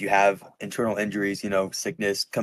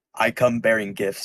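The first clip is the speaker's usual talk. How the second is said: loud, magical-sounding booming voice; 2 semitones higher, 3 dB louder than usual. Casting Thaumaturgy in character to get everyone to hear: magically booming voice. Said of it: "I'm gonna boom my voice".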